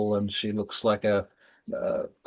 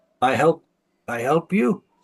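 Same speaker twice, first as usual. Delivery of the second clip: broken words forced out in a raised voice; 5 semitones higher, 6 dB louder than usual. Narrator voicing a house slave who opens the door to the players, broken Common speech. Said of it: "she says in broken common".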